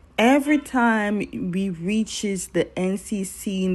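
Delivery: ordinary talk, nothing marked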